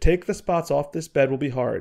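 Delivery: ordinary delivery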